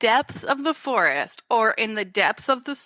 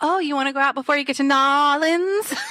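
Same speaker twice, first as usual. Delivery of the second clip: put-on Southern accent, higher; 3 semitones higher, 3 dB louder than usual. Mocking a movie character's line in her Southern accent: Brenda's Southern accent. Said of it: "she's very Southern".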